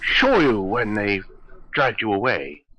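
sophisticated, charming, suave cat voice. In a role-playing game, a player speaks as their cat character: suave pipe-smoking cat voice. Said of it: "Who doesn't love a suave, sophisticated, pipe-smoking cat?".

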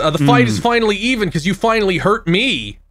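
ordinary delivery

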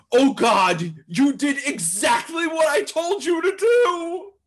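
high, loud, freaked-out panic. Reading a comic's caption aloud as the manager: mock-panicked manager voice. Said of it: "the manager's voice going".

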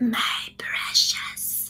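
hoarse, raspy, creepy whispered creature voice. Explaining a film character, the speaker demonstrates his words: raspy Gollum voice. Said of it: "with this kind of raspy like voice".

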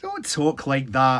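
said sharply, cutting. Alfie answers old John, said sharply. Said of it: "Alfie said sharply".

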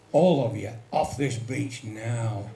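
very stern, slow policeman voice. Recalling a policeman ordering everyone off the beach, retelling a very stern order. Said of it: "in a very stern voice".

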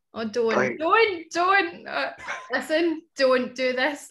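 slow, high, fighting back tears, on the verge of crying. Begging others not to go on with a touching story: holding back tears. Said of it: "you can cry. It's all right".

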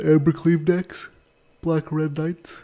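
sleepy, yawning speech. A player commenting on a card game, yawning while talking. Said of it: "Sorry, I'm yawning".

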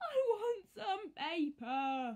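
very slow, tearful, drawn-out crying whine. William, who has no paper, is whining at Horrid Henry. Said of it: "whined William".

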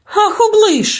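high, petulant, capricious, wilful outburst. The little witch, scolded by the raven Abraxas, exclaims capriciously. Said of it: "вередливо вигукнула".

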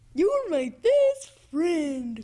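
made-up, put-on puppet bird voice. Asked what voice to give a puppet bird, performing: voice for Norman the Bird. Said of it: "What kind of voice do you want to give him?".

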